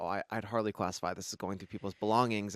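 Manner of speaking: plain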